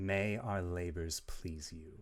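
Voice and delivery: voiced as a woman. Voicing an attacker who whispers after stabbing a player: feminine voice. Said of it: "words from a feminine voice".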